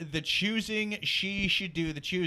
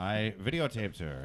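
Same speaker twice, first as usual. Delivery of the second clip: calm narrator voice, pitched lower; 11 semitones lower, 3 dB quieter than usual. Voicing the cheating husband's confession: Morgan Freeman voice. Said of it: "do this guy with Morgan Freeman's voice".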